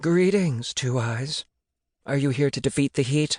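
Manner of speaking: rasping, raspy giant spider creature voice. Narrator reads a spider greeting Zeus, in a raspy spider voice. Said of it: "said in a raspy voice".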